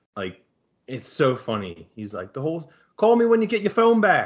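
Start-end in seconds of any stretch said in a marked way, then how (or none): 2.4-4.3 put-on accidental Australian accent, higher and louder. Speaker quotes a man while failing at a Delco accent, accidental Australian accent. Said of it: "That was Australian".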